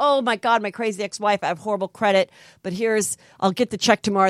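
ordinary delivery

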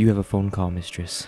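expressionless, flat, level monotone drone. Retelling a scene where a man playing Gary Osterling announces a call, monotone. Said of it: "in like this like monotone voice".

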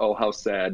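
plain

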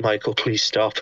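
mock exhausted, tired voice. Retelling asking someone at another table to stop: imitating own exhausted voice. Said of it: "I was just exhausted".

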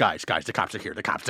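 muttering under the breath. Retelling walking toward everybody as a squad car pulls up, muttering under breath. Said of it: "saying under my breath".

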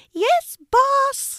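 loud, very high chorus of squeaks. The mice answer their boss after hearing his instructions: loud squeak. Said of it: "squeaked the mice loudly".

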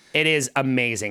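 ordinary delivery

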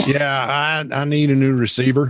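put-on country accent. Retelling a tech support call, voicing the young customer in a country accent. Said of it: "with a country accent".

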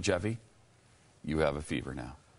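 play-acted smug, self-satisfied, told-you-so tone. Repeating the officer's line to another speaker: put-on smug tone. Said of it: "Do I look smug?".

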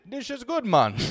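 put-on Jamaican accent. Acting out a man right after he took a sip, imitated Jamaican accent. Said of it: "definitely a Jamaican".

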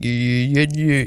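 faked, deep, low bass voice.

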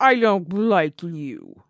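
loud, swooping cartoon dog voice. Friends trying to name a cartoon character's voice; one does a Droopy Dog voice. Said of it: "that's Droopy yes, Dog".

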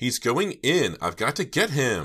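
piercing, shrill, loud, desperate shriek. Narrator reading a character whose friend is heading into a house, shrieking. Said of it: "Jade shrieked".

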